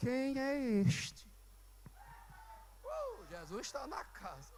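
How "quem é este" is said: quiet, soft, hushed, under the breath. Quoting a disciple in a bible story, speaking softly. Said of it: "eu vou falar baixinho".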